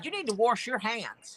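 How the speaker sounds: put-on Mississippi-style Southern US accent. Retelling what they tell people on visits to Mississippi, Southern accent. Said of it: "every time I go down to Mississippi".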